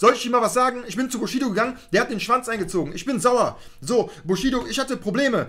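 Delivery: unrestrained, wild delivery.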